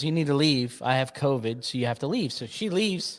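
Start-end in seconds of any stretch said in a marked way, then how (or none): none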